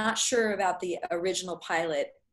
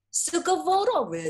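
put-on Italian accent, much higher; 9 semitones higher than usual. Saying a website slogan badly as asked, in an Italian-sounding accent. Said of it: "That sounded Italian".

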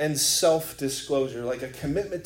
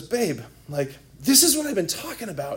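put-on shaky, trembling voice; 4 semitones higher than usual. Speaker retells what a man said to a woman, imitating a shaking voice. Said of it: "his like voice is shaking".

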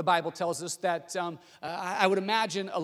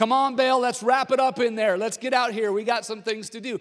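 put-on mocking taunt, higher and louder; 5 semitones higher, 7 dB louder than usual. Retelling how Elijah mocked the prophets of Baal: imitating Elijah mocking. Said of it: "This is what Elijah is saying".

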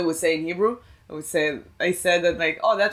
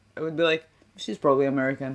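usual speaking voice

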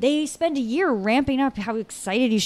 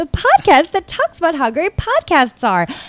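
high, loud, raised-up voice. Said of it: "I had to really raise it up there".

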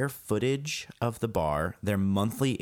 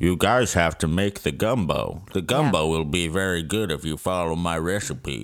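low-pitched, loud, pushed-out put-on voice; 4 semitones lower, 5 dB louder than usual. Imitating a man from a TV show the group is discussing, Droopy voice. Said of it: "that was a little more like droopy".

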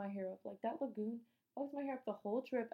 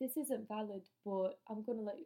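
clumsy, bad put-on British accent. Retelling what an old british guy said to them, in a bad british accent. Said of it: "My accent is trash".

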